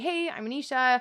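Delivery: casual, friendly, relaxed tone. An actor showing how she always says hi in her audition slates: friendly slate greeting.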